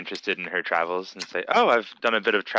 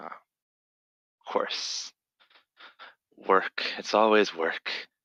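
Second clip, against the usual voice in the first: muttering under the breath; 4 dB quieter than usual. Voicing Veribor as he studies his opponent across the table, muttering under his breath. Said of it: "mutter under his breath".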